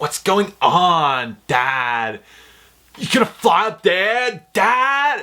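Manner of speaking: "on" said high, slow and drawn out. Mocking a movie character's bad acting with an impression. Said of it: "that's my best impression of him".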